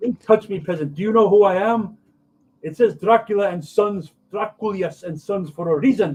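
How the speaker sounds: loud, high fake Romanian vampire accent. Playing a character in a scene: false Romanian accent. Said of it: "speaking kind of like a false Romanian accent".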